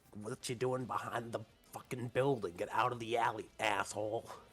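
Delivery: loud, rough, gritty creature voice. Speaker voices an imagined mustached character, gritty voice. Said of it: "it sounds like it would have a gritty voice".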